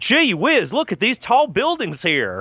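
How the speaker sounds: put-on very high, swooping rural country bumpkin accent. Imagining rural cousins seeing New York City: country bumpkin accent. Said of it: "they even would have had a kind of a country bumpkin accent".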